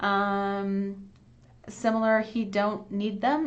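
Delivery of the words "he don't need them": slow, deliberate, carefully spelled-out delivery. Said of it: "it should be he doesn't need them".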